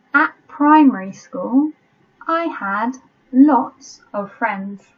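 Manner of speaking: slow, deliberate, dictation-paced reading. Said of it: "I'll read it slowly and I'll read it several times".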